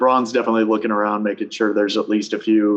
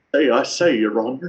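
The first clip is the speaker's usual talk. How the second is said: blustery, blustering delivery in a Southern drawl; 3 semitones higher than usual. As a courtroom scene is described, a listener jumps in: Foghorn Leghorn impression. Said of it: "Is this going to be a Foghorn Leghorn impression?".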